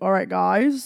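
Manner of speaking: bad, failed put-on British accent. Greeting the audience with a bad attempted British accent. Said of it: "there was my intent of a British accent".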